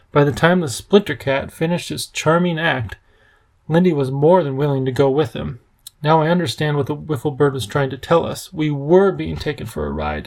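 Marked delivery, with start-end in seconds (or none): none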